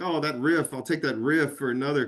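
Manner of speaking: ordinary delivery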